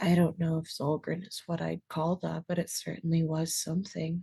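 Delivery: very quiet, low, softly spoken murmur. In a tabletop game, Lokia speaks from Leora's shoulder, very quiet. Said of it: "just says very quietly".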